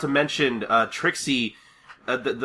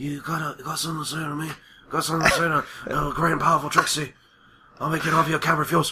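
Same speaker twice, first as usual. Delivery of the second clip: tough-talking mafia boss voice; 3 semitones higher than usual. Retelling a cartoon scene, voicing Trixie as a Godfather-like character. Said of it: "turns into, like, a Godfather-like character".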